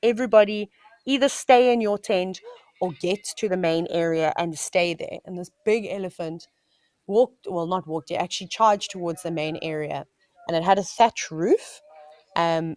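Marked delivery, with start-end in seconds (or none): none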